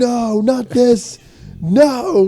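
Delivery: mock shrill, very high, long drawn-out scream. Imagining a news report about a man in a theater, mock screaming. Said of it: "He kept screaming".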